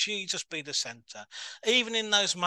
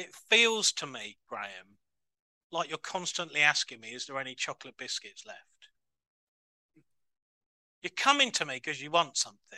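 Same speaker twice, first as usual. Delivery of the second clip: put-on, slightly reproachful tone with pointed edge; 3 semitones lower than usual. A speaker retells what he felt god say to him, quoting with a bit of tone. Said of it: "with a bit of a tone in my voice".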